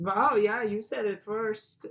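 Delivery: clumsy, bad, high, put-on German accent. Retelling what the scientists said, bad German accent. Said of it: "I had so bad German accent".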